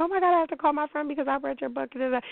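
mock, very high, gushing, squealing scream. Retelling someone in a taxi reacting to the book: imitating someone screaming. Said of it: "she starts screaming and is like".

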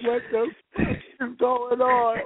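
tearful, sobbing, slow crying voice. Retelling eating a burger after quitting vegan food: imitating own past crying. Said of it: "crying like".

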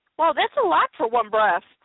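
ordinary delivery

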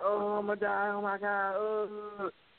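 mock panicked screaming. Recalling an inmate on the prison floor after swallowing drugs, retelling a panicked scream. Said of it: "screaming bloody murder".

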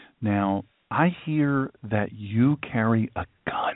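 timid, sheepish and very slow. Retelling how church callers ask about carrying a gun: imitating a sheepish caller. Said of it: "they'll very sheepishly say".

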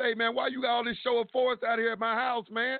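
mock confrontational yell, high-pitched. Retelling confronting a detective at his house, retelling a scream. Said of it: "I'm screaming at him".

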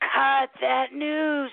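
mock urgent screaming, called out urgently. Retelling screaming at someone on TV: imitating screaming at the TV. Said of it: "we're screaming".

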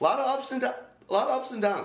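talking through hiccups. Speaker discussing a team on a show, hiccuping mid-sentence. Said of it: "I got the hiccups".

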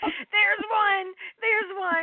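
very high, stretched-out, drawn-out scream. Telling how she spotted the monks and screamed to her husband: retelling a scream. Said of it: "I screamed to my husband".

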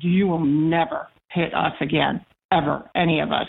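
normal talking voice

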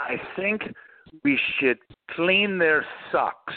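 put-on French accent. Retelling how a brilliant engineer spoke up, in Francois Castaing's heavy French accent. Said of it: "in his heavy French accent".

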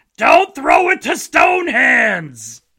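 aghast, horrified, very slow, stretched-out, swooping bellow. Retelling a film moment on the sidelines as a ball is thrown, mock-horrified Robert Loggia impression. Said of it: "he's horrified".

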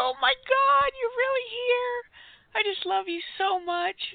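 very high, very loud, hyperventilating gushing fangirl voice. The host greets her guest, the Canadian Prime Minister, overexcited gushing. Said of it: "I'm going to hyperventilate".

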